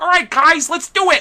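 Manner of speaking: very high, loud, squeaky puppet-like voice. Imitating the original Pidge from the show: Pidge voice, like a Muppet. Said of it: "he sounds like a Muppet".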